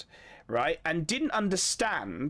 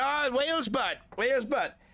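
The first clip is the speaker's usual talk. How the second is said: put-on broad, thick Welsh accent, drunk, pitched up; 7 semitones higher than usual. Retelling answering a stranger who asked where they were from, in a strong Welsh accent. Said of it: "I was drunk, so I sound more Welsh".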